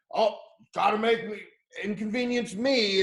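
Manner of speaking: put-on high-pitched shouting. Retelling how a dude who made a scene yelled: imitating someone yelling.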